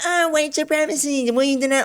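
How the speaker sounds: very high-pitched, mocking, ridiculing voice. Mimicking the interviewer's question: mocking imitation of the interviewer. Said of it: "So for her to be like".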